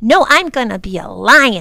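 proud, very loud boastful announcing, "lion" drawn out. Narrator reads a girl correcting a guess about her costume, proudly. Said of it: "she said proudly".

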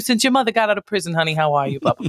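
put-on New York-accented speech. Improviser in character greeting someone, New York accent. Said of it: "I love the New York accent there".

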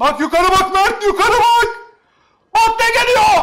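high, slow excited calling out.

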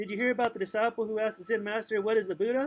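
ordinary delivery

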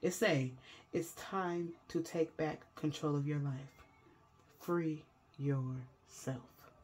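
calm, soft, slow, everything slowed down. Card reader delivering a reading message to viewers, real calm. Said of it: "I had to say that real calm".

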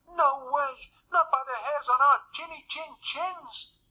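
very high-pitched calling-out cry. Narrator reads the three little pigs answering the wolf at the door, crying out. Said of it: "cried the three little pigs".

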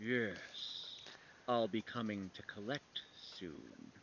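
dripping, menacing, breathy whispered creature voice. Voicing something made of cat tails, in a drippy, ominous voice. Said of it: "In a kind of a drippy, ominous voice".

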